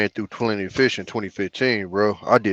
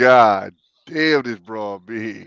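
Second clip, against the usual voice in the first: normal talking voice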